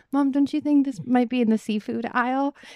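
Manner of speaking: as gentle as possible, very soft. Retelling asking Mom in the deli line: imitating a very gentle question. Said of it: "as gently as possible".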